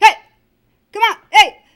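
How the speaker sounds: very loud, high-pitched call projected far. Showing learners how to project their voice, in a projected calling voice. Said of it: "just project your voice".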